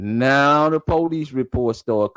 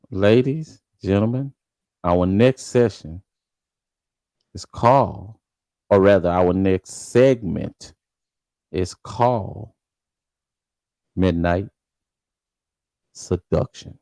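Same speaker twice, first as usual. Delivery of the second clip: low, sultry, seductive show voice; 6 semitones lower than usual. Speaker introducing the next segment to ladies and gentlemen, seductive voice. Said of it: "get my sev- my seductive voice going".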